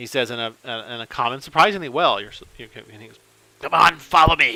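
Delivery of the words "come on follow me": put-on old kobold voice, raised pitch. A game master voices an old kobold leading the party, old kobold voice. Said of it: "for an old kobold".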